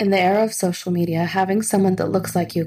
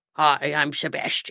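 disguised, low, put-on bro-style boy voice; 4 semitones lower, 3 dB quieter than usual. Imitating an actress's put-on voice for her character Sebastian. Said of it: "she would do, like".

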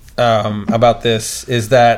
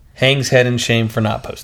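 usual speaking voice

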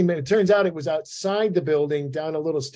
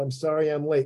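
re-enacted put-on mumble. Retelling arriving late to an AA meeting, the speaker re-enacts their words: retelling a mumbled apology. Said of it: "crack that door open and mumble".

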